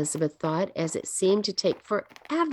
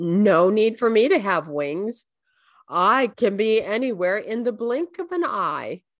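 speaking while chuckling; 3 dB louder than usual. The fountainhead answers Elizabeth's question; chuckling. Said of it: "the fountainhead chuckled".

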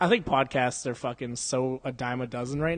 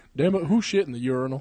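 fake doddering old man voice; 4 dB louder than usual. Explaining what a cartoon character's voice sounds like, doing a senile old Hank Hill voice. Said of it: "a really senile old Hank Hill".

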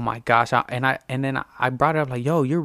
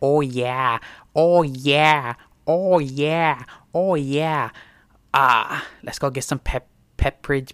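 put-on Boston girl impression. Repeat Ted's bit showing what a Boston girl sounds like, imitating a Boston girl. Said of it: "you want to know what a Boston girl sounds like?".

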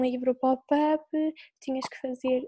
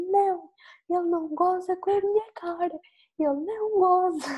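mock tearful, furious crying, high and slow; 6 semitones higher than usual. Retelling to a friend what she told a colleague when confronted; imitating crying with rage. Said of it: "ficas bem nervosa e começas a chorar de raiva".

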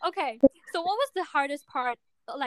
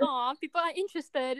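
normal talking voice

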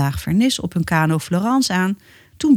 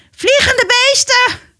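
terrified, shrill, loud, very high-pitched screech; 6 dB louder than usual. Narrator reading a story, Biggetje sees the flying creatures and shrieks. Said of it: "krijste hij".

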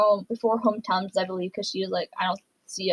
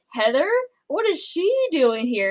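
hammy acted surprise, high and swooping; 7 semitones higher than usual. Retelling how Chris Harrison reacted when she arrived: imitating Chris Harrison's acted surprise. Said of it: "very, like, active, acting kind of voice".

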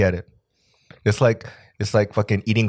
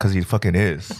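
ordinary delivery

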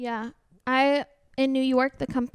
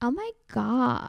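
over-the-top, exaggerated valley girl accent. Contrasting vocal fry with Valley Girl speech, in a Valley Girl voice. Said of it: "Where Valley Girl is more of".

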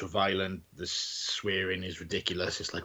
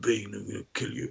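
put-on dumb brute voice. Describing how a viewer would expect Bane to talk: dumb meathead Bane voice. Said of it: "this big fucking meathead".

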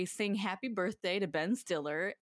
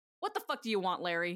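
irritated, annoyed, hostile tone. Retelling a TV scene where Susie greets Larry: Susie impression. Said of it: "And she replies".

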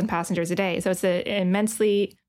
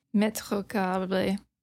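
put-on Spanish accent with French-sounding pronunciation; 4 dB quieter than usual. Trying another speaker's pronunciation of a name: attempted spanish accent sounding french. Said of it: "That sounds French".

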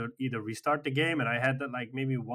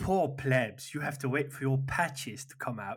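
put-on snobby British accent. Mocking the other speaker as elite: mock British accent. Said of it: "What's with the British accent?".

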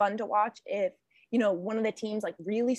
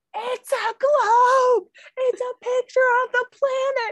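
very high, very slow, loud shriek; 9 dB louder than usual. Retelling a moment among several people, imitating Devin screaming. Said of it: "you just have Devin screaming".

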